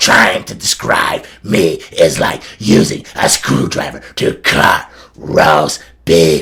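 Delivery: deep, gravelly, slow, loud drawl, ground out. Imitating a wrestler who talked gravel and grizzled: Luna Vachon gravelly voice. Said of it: "she would talk like that all the time".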